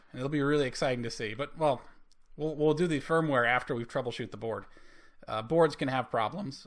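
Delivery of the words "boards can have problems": voice cracking and breaking. Explaining how to troubleshoot a circuit board: voice cracking. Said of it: "a little voice crack there".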